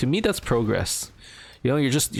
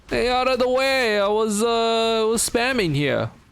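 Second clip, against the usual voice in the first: very high, attempted put-on New York accent; 11 semitones higher than usual. Speaker tries the accent again while playing a game, in an attempted New York accent. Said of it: "my best attempt at a New York accent".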